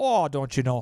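Upper Midwest Minnesota accent. Showing how someone talks after living in Minnesota long: Minnesota accent. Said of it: "you'll start to talk like you're from Minnesota".

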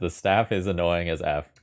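ordinary delivery

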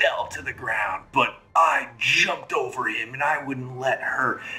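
bragging character voice. Narrating to players, voicing Rockard with a cup of ale, bragging.

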